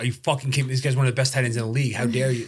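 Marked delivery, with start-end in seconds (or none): none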